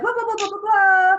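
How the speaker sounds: high, loud mock babble rattled off too fast. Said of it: "I feel like I'm talking fast".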